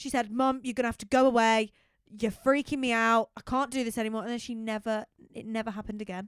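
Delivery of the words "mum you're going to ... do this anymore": raised shouting voice. Retelling how a parent shouted at her mother's ghost: imitating someone shouting. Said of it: "shouted at the ghost".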